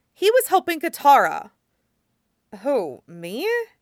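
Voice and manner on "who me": skeptical, doubtful, quieter. Narrator reading the waterbender's reply after Aang says he was helping Katara, skeptical. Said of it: "The waterbender said skeptically".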